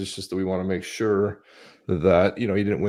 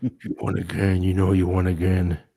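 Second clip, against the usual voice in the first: put-on mafia boss voice. Retelling what he said to Charles, in a Vito Corleone voice. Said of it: "Said in Vito Corleone's voice".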